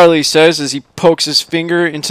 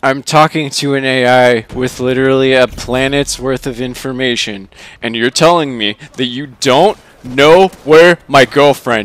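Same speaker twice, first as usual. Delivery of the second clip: plain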